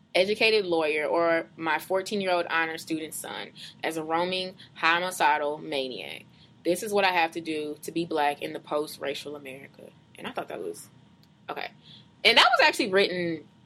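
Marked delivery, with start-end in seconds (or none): none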